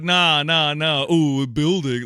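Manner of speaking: mocking, dopey put-on dumb-guy voice. Mocking how the other person answers his arguments, dumb guy voice. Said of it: "in a dumb guy voice".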